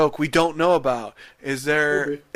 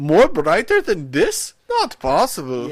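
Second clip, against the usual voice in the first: put-on character voice, sing-song and swooping; 4 semitones higher than usual. Retelling what a crew member said while wiping a table: imitating Bruno. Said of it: "Bruno's like".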